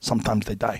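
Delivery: put-on thick Korean accent. Retelling an intense man's blunt reply, imitating his thick Korean accent. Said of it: "with his thick Korean accent".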